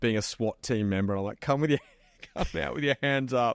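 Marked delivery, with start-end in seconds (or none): 1.4-3.6 laughing, giggle-broken delivery with megaphone-like sound. Retelling calling out as a swat team member during a prank: retelling own laughing megaphone call. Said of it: "laughing in this megaphone".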